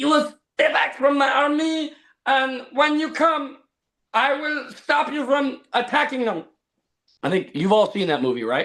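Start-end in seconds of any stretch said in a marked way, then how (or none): 0.0-6.4 very high, put-on Mongolian accent. Describing a movie role, swinging a sword at an attacker: put-on Mongolian accent. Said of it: "the Mongolian accent".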